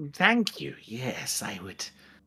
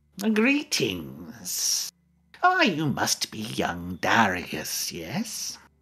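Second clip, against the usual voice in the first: put-on low, aged, wizened old man voice; 4 semitones lower than usual. Game master voicing an old character greeting the player's character, in a wizened old man voice. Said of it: "wizened old voice issues forth".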